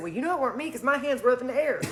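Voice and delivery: ordinary talk, nothing marked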